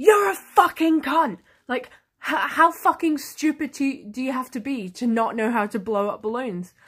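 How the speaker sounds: put-on sudden furious outburst, zero-to-sixty rage. Retelling a customer suddenly going zero to sixty: imitating a furious customer. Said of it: "she went zero to sixty on me".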